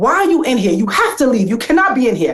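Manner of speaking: play-acted, urgent, mild yell of scolding. Retelling ordering a man out of the locker room: retelling own screaming. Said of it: "I start screaming at him".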